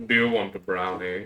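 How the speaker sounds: put-on creepy voice. Retelling offering a brownie to Toby earlier: imitating a creepy voice. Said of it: "the creepiest way possible".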